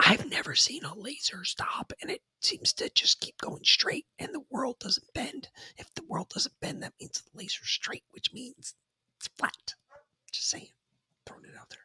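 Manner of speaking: rushed, quick, very hushed, barely audible whisper. Making a point to another speaker, Joe Biden whisper. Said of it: "Why are you whispering?".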